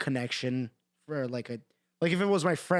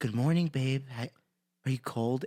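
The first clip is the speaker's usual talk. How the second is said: mock soft, gentle boyfriend-style ASMR voice. Telling a friend about boyfriend asmr videos, quoting the guy: imitating soft asmr boyfriend voice. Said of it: "and it's like also ASMR".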